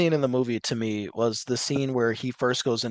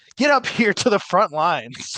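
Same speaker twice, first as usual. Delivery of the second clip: imitated manic woman, higher; 7 semitones higher, 4 dB louder than usual. Retelling what a woman said to a crowd at a protest: imitating a manic woman. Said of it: "she was being manic".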